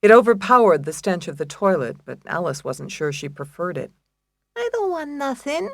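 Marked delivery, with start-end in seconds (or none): 4.5-5.7 put-on very high, babyish little voice. Answering a cellmate's question about what she wants, in a baby voice. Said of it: "answered in her baby voice".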